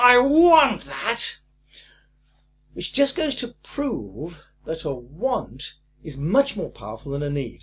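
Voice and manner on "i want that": put-on shrill spoiled-child screech. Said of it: "What they really were screaming was".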